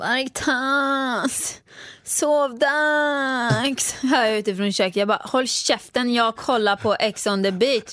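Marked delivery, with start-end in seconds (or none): 0.0-4.0 whiny whimper. Asked to show how the other sounds when tired in the evenings, imitating someone whining. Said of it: "Visa hur jag låter".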